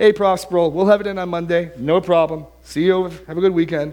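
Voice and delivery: high, loud, breezy, cavalier brush-off. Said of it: "sort of cavalierly walk by".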